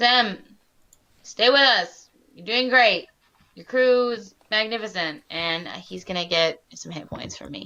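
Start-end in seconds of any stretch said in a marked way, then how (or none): 0.0-5.2 loud rallying shout, supportive and encouraging in tone. In a tabletop game, calling out to a badly wounded character, yelling encouragement. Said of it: "I'm gonna yell to him and be like".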